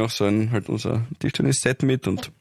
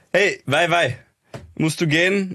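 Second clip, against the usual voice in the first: clumsy, bad put-on Egyptian accent, high and slow; 5 semitones higher than usual. Asked to try it, the speaker performs lines in a bad Egyptian accent. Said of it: "du kannst Kärntner besser nachmachen, als ich jetzt einen Ägypter".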